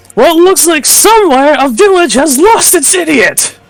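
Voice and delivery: jeering, taunting yell pitched very high. Casting cutting words, hand cupped around mouth: yelling a taunt. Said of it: "throw out my hand around my mouth in a half cup and yell".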